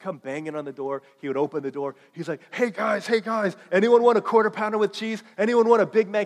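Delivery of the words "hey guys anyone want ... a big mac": put-on excitement, much higher. A speaker retells a friend arriving at their door at 1:30 a.m.: imitating an excited friend. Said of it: "like he's so excited about something".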